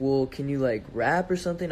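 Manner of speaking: ordinary talk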